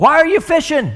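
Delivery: play-acted, very high, loud yell. Retelling the lady's reply across the water: imitating someone shouting back. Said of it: "she shouts back".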